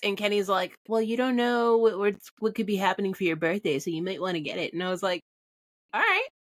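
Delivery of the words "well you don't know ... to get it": play-acted, mocking, teasing put-on voice. Retelling what someone said about buying the dress, making-fun-of-people voice. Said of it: "my me making fun of people voice".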